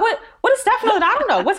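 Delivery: very high, rushed, frantic bewildered panic. Retelling a confusing phone call about Steph and acting out past panic: acting out own panic. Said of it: "I'm like panicking".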